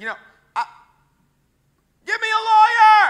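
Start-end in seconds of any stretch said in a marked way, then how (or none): 2.1-3.1 pretend yelling at top of lungs, higher, louder. Acting out being a wrongly jailed prisoner protesting: mock shouting at top of lungs. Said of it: "shouting from the top of my lungs".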